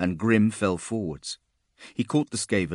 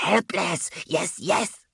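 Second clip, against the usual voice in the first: very high, shrill, hissing creature voice; 11 semitones higher than usual. Reading a story, voicing a creature closing in on helpless Grim: hissing. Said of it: "it hissed".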